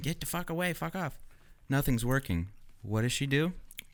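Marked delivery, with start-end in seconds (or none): 0.0-1.2 mock high, panicked, freaked-out screaming. Retelling how a woman screamed at a stalking cougar: imitating someone screaming. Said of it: "starts yelling at it, screaming".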